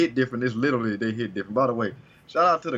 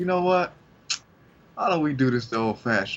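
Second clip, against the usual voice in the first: mock cocky, swaggering, self-assured, confident tone; 2 semitones higher than usual. Retelling a character's line from a fight scene: imitating a confident character. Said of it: "so confident".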